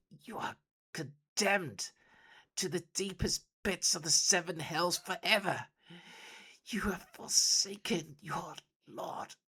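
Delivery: very high hiss through the teeth. Narrator voices the dying master speaking to his betrayer, hissing. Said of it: "he hisses through bloody teeth".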